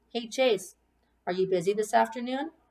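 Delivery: ordinary delivery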